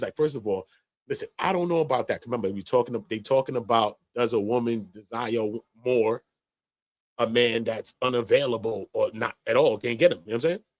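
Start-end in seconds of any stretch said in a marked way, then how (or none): 0.2-2.3 irritated, frustrated, objecting tone of voice. Retelling what a panelist said on the panel: imitating Mika, frustrated. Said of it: "She was getting frustrated".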